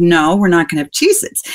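ordinary delivery

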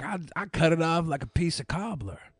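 slow, put-on Southern drawl. Joking about what the other speaker might have said: put-on southern accent. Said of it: "I thought you were gonna say something Southern".

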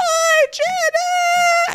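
high, scratchy voice, sounding delighted. Retelling a reality show scene in Dorit's voice: Dorit scratchy voice. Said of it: "Dorit has full-on Dorit scratchy voice on".

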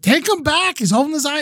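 mock shrill yell, pitched way up. Retelling how their mom yelled at the doctors, imitating mom yelling at doctors. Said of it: "my mom was just like yelling at the doctors".

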